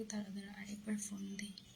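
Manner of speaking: quick whisper under the breath.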